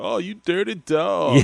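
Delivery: very slow, each word drawn way out. Retelling a comedy sketch line in a Bill Clinton voice. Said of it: "in his Bill Clinton voice was like".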